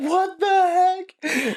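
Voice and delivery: very high, slow, drawn-out shocked exclamation. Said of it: "everyone's like".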